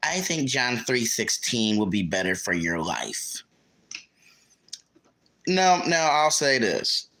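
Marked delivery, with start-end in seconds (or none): 0.0-3.4 stuck-up, snooty voice. Retelling what a woman in line said about a shirt: imitating a snooty voice. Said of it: "she says with the snootiest voice".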